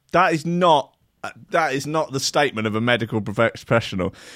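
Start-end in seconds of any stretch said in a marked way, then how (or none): none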